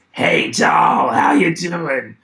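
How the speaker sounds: loud, swooping fifties chain-smoker ant voice. Complaining of losing their voice, the speaker greets the other speaker in a chain-smoking 1950s ant voice. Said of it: "I sound like a chain smoking ant from the nineteen fifties".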